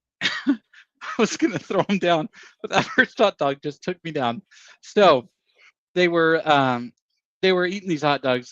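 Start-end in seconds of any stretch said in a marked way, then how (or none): 0.2-4.4 words breaking up with helpless laughter. Recalling a contest moment, trying not to laugh: laughing so hard while talking. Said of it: "it's definitely crying 'cause I'm laughing so hard".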